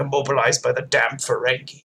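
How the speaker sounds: low mutter under the breath. Recapping a scene where Worf is upset about the Ferengi: Worf muttering under his breath. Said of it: "like really under his breath".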